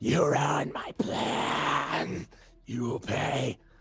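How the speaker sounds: horrible, high, hissing monster voice. Voicing a creature that has lost its plan: hissing creature voice. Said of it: "horrible hiss that says".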